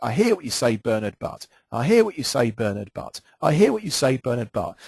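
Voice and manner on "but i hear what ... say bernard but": ordinary talk, nothing marked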